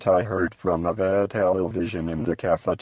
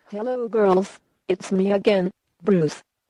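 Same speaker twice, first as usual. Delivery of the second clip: put-on childlike, girly, very high little girl voice; 13 semitones higher than usual. Greeting the girls on the show again, speaking in a little girl voice. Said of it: "here comes Bruce with his little girl voice again".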